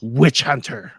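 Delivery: loud, snarling delivery. Narrating a game scene, a woman answers a witch hunter: snarling. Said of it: "She snarls and says".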